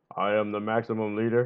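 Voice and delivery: deep-voiced, declaring tone. Reading aloud the maximum leader's line in a story: deep voice. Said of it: "he says in his deep voice".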